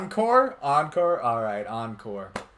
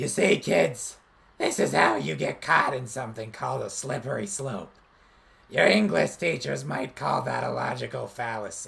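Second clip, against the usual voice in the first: voice-straining put-on toad voice; 3 semitones lower, 4 dB quieter than usual. Performing an anti-drug PSA as an encore: Smoker Toad character voice. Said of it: "repeat the Smoker Toad line".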